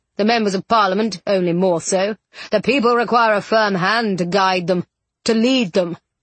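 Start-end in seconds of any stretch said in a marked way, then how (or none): none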